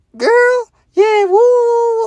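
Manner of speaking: slick, gossipy, very high, loud chatter, woo stretched. Retelling how a mom talks on the phone with an auntie: imitating mom slick talking. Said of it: "she like".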